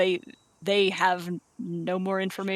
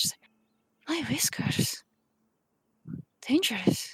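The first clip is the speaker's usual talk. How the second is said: hushed character voice, higher pitch; 6 semitones higher than usual. A game narrator voices a character in the scene: Eliza's very little hushed voice. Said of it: "very little hushed voice".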